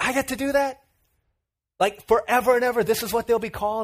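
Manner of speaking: mock thrilled, high, excited, eager tone. Retelling a story of Adam naming animals, imitating excited Adam. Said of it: "Adam gets really excited".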